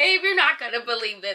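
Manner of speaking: mock laugh-cry, caught between laughing and crying. Retelling a boyfriend's phone call: imitating someone half laughing, half crying. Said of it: "that's his tone".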